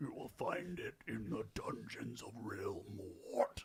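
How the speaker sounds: sickening throaty demon voice. Speaking as the demon in the house: sickening, popping, throaty voice. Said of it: "with its sickening, popping, throaty voice".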